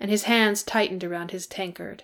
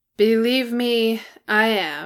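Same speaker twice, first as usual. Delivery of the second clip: very slow, bone-dry deadpan delivery; 2 semitones higher than usual. Narrator reads Bilbo replying to Bofur from the door, dry. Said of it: "Bilbo said dryly from the door".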